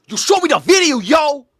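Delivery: put-on shrill, loud, shouted tough New York accent. Mimicking a woman's line from a clip: imitating a tough New York accent. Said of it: "That's New York, man".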